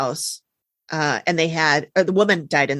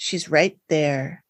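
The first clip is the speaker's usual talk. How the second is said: put-on creepy woman's voice. Retelling how a woman pointed up a staircase and spoke, mock-creepy voice. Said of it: "she creepily points up to the top of the staircase and goes".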